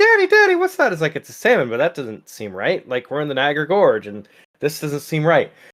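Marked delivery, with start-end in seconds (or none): 0.0-0.9 put-on tiny child's voice, squeaked very high, little boy. Telling a made-up story, the speaker voices a boy on the Maid of the Mist, imitating a little boy. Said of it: "the little boy's like looks over and goes like".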